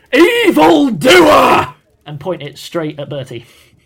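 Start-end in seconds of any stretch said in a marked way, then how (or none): 0.1-1.7 very loud, high-pitched, all-out yell. In a game, a character draws a weapon on Bertie, yelling in loudest possible voice. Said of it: "yell in the loudest possible voice".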